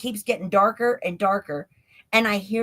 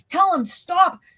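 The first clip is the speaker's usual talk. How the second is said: high, frantic scream; 9 semitones higher, 4 dB louder than usual. Retelling what a man screamed at the speaker, retelling a scream. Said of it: "he's like screaming at me".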